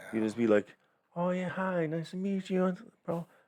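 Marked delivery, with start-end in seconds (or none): 1.2-3.3 very high, slow, fake-friendly put-on voice. Acting out polite small talk with a stranger: put-on higher voice. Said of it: "I feel like your voice gets higher".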